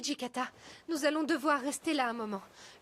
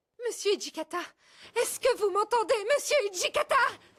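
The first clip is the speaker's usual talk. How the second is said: insistent, loud yell rising in pitch; 7 semitones higher, 6 dB louder than usual. Calling out to a man to check he can hear, yelling. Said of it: "Arrête de hurler".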